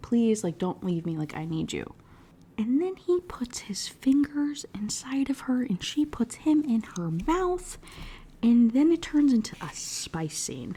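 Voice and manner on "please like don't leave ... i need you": put-on tearful pleading crying voice. Retelling a book scene where a character cries and pleads: imitating someone crying and pleading. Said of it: "crying into his back and she's like".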